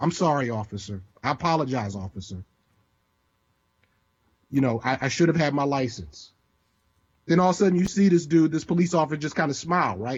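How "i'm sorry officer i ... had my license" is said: play-acted, submissive, shrunken-down, meek, small voice. Retelling apologizing to the police officer: retelling a meek, small apology. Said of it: "Now I gotta make myself small".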